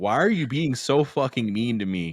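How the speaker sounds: put-on, sudden, high-pitched blow-up. Retelling a film scene where Arthur goes off: Arthur going off. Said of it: "Arthur kinda just goes off like".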